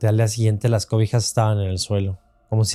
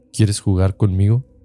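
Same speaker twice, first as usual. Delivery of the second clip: put-on deep voice, clearly not a child's; 3 dB louder than usual. Retelling a dream where a child asks to play: deep voice that's not a child's. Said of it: "me decía con voz grave que no era de niño".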